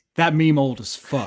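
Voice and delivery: quiet, muttered under the breath. Voicing a character in a game scene who mutters under his breath: muttered under the breath. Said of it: "say under his breath".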